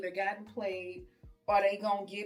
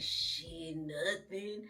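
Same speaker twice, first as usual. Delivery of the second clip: low, deep male voice; 4 semitones lower, 6 dB quieter than usual. Retelling texts with a guy she liked, imitating his voice. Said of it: "that's what his voice would sound like".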